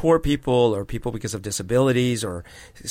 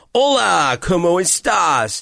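put-on thick, laid-on American accent, pitched up; 7 semitones higher, 4 dB louder than usual. Imitating someone from the United States speaking Spanish: thick American accent. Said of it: "they'd have this thick accent when they talked in Spanish".

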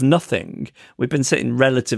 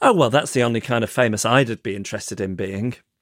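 plain

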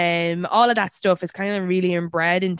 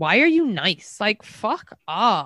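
mock mean, rude tone. Retelling how a woman questioned someone for being nice: imitating a mean tone. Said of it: "her tone is like".

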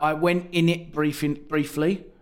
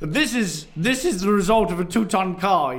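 put-on posh voice, attempted Italian accent, higher, louder; 4 semitones higher, 4 dB louder than usual. Quoting what a man said about his brakes, attempting an Italian accent: posh voice. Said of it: "You just went really posh".

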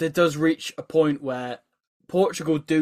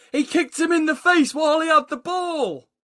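raised shout, higher pitch; 12 semitones higher than usual. Retelling what the crowd yelled at the match: imitating the crowd shouting. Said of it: "the crowd are all shouting".

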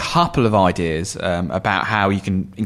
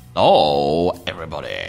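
daft, put-on, low, goofy, silly voice; 4 semitones lower than usual. Podcast co-host greeting listeners at the start of an episode, in a stupid voice. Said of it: "I don't know why I did that in such a stupid voice".

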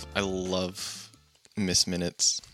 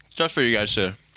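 mouth full, higher and louder; 3 semitones higher, 5 dB louder than usual. Podcast host starts an intro episode while eating; talking with mouth full. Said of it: "my mouth is full".

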